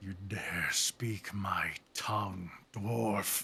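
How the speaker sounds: very low, great dragon voice. Storyteller voicing a dragon that suddenly addresses a fleeing dwarf: very low dragon voice. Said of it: "Just very low".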